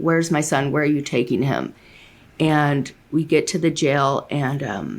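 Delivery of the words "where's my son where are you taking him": tearful, crying, pleading voice through sobs. Retelling being driven to jail after arrest, retelling own crying pleas. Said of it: "and I'm crying the whole way, saying".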